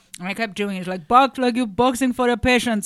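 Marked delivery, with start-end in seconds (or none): 1.1-2.9 rough put-on West African accent, pitched up. Retelling what the boxing instructor said: imitating west african accent. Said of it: "West African, I'm not doing that impression right".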